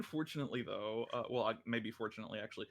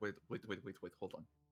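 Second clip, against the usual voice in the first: soft mumble under the breath, half to oneself; 3 semitones lower, 6 dB quieter than usual. Voicing Zhao during a perception check: Zhao mumbling. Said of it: "you all just hear Zhao start mumbling".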